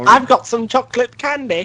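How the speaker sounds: creepy British voice. In a group conversation, saying the line in his perverted british guy voice. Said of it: "what voice was that?".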